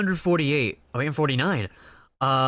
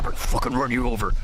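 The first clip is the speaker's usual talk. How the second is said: hostile, toxic, aggressive taunting tone; 2 semitones lower than usual. Imitating racers turning on each other: imitating toxic racers. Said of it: "it's about to get toxic in here".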